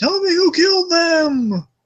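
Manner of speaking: very high slow yell, them drawn out. Retelling how Bruce was yelling at the embers: imitating Bruce Wayne yelling. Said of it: "Bruce kinda slowly just yelling at the embers".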